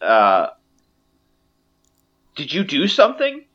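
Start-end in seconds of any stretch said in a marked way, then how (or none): 2.4-3.3 quick high-pitched voice. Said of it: "The archer says".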